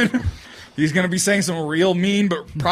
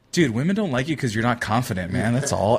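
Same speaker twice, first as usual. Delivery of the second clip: quiet, hushed, leaned-in stage whisper; 8 semitones lower, 3 dB quieter than usual. Retelling what a drunk friend leans over and says: imitating a half-whisper. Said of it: "he'll, like, whisper it".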